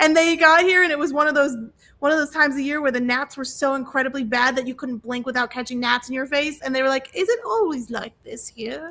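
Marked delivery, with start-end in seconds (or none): 7.1-8.9 put-on British English accent. Retelling what a visiting english couple asked, english accent. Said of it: "Where did you pick up that accent at?".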